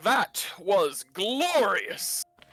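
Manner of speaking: loud high character voice. After the victory, Hephaestori's voice booms out over the party. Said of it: "Hephaestori's voice booms out".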